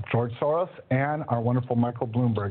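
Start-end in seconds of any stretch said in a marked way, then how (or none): none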